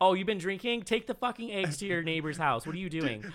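offhand, unfazed tone. Retelling what the mom in the movie said: imitating an unfazed mom. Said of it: "His mom was, like, totally just like".

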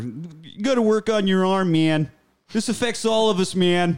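high pleading voice. Replaying a movie line, sounding like pleading Walter. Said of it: "almost sounds a bit like Walter".

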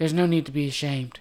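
mock eerie, creepy, soothing, reassuring calm. Imitating a film character who kills people: imitating a creepy lulling voice. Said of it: "trying to lull them into their deaths".

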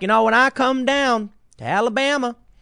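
put-on Southern drawl. Retelling a politician speaking to a crowd in Alabama: imitating Hillary Clinton's put-on Southern drawl. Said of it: "she puts on a Southern drawl".

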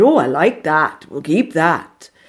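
bad, clumsy put-on Welsh accent. Quoting Geraint Morris in the makeup department: Geraint Morris, bad Welsh accent. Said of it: "That's a bad Welsh accent, by the way".

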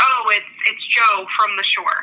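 put-on breezy, totally casual, offhand tone. Retelling a mother's reply about the father: imitating a very nonchalant reply. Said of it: "Very, very nonchalant, very casual".

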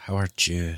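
put-on Mexican accent. Greeting the other speaker again, showing how he'd say it: put-on Mexican accent. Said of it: "I just wanna say it like this".

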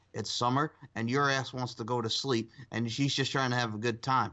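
normal talking voice

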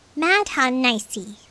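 small, tiny, high parroting voice. Narrating Wyatt echoing Ginny's mom, in his tiny voice. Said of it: "Wyatt echoed in his tiny voice".

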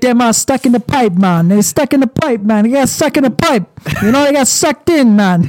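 put-on Trinidadian accent. Retelling what a man said about people stuck in the pipe: imitating a heavy Trinidadian accent. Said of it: "he had a heavy accent. I mean, it's Trinidad".

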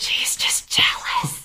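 soft, leaning-in whisper. Leaning over to another character in the scene: whispering in character. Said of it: "leans over and whispers".

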